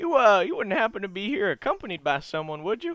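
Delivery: high, swooping, jokey laughing delivery. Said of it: "he kinda laughs in a joking way".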